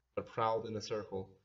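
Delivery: plain reading voice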